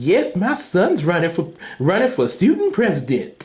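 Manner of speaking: cartoon father voice, pitch swinging all over. Comparing father and son cartoon voices, imitating Wizard Kelly. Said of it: "his father, Wizard Kelly".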